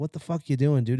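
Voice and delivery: ordinary talk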